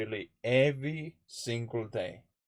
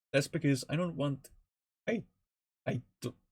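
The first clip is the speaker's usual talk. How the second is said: halting stammer, repeating over the words; 4 semitones higher than usual. Addressing fans of the community, stuttering. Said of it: "sorry if I'm stuttering a little bit".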